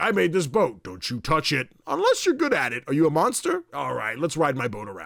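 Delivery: goofy, swooping, sing-song silly voice. Describing a game's crocodile character to another speaker: silly goofy Yeti voice. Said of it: "he's silly and goofy".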